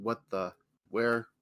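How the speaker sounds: loud, flat, droning monotone grumble. A narrator voices a man in the audience upstairs: grumbling in a monotone. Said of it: "begin to grumble in his monotone voice".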